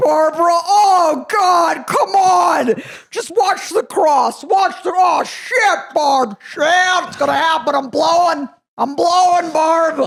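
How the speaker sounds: shrill, very loud, very high, drawn-out exclamations. Retelling a friend's impression of his stepdad during sex: imitating Bruce. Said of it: "he did this impression of".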